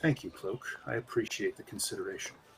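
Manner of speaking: very quiet, soft, gently spoken hushed voice. Narrator voicing a cloaked magician character after a coin trick, soft voice. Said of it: "says in his soft voice".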